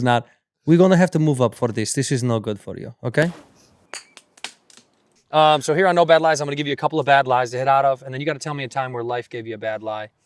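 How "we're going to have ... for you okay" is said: put-on angry Russian woman voice. Retelling a golf opponent's complaint about moving the tees: imitating Natalia, mad. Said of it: "She was mad".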